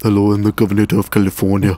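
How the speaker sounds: calm, even, easygoing delivery. Showing how Arnold really talks, calmer than people assume: calm Arnold Schwarzenegger impression. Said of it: "he talks way more calmly than everybody".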